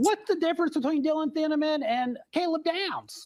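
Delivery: very high pitch, drawn out. Retelling a question put to the speaker yesterday: Pete Prisco impression. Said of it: "I'll do my best impression".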